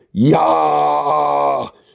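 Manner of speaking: manic, overacted, high, rough, drawn-out warrior scream. Reading an absurd story aloud, narrator gives a Teletubby's enraged roar.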